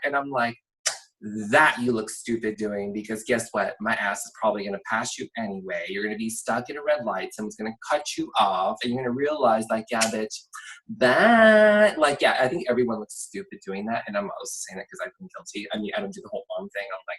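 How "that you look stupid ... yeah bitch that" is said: usual speaking voice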